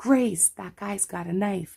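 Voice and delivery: put-on, loud, high yell. Speaker retells yelling out to a security guard: retelling a yell. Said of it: "I yell to the security guard".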